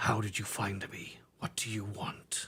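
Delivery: low, breathy, menacing growl. A game player voices a Wookiee character: low menacing Wookiee growl. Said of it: "he's gonna growl in a low, menacing voice".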